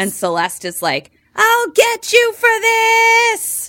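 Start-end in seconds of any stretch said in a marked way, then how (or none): 1.3-3.7 "this" drawn out long, said loud and high. Retelling a character's threat like a Disney villain. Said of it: "Like a Disney villain".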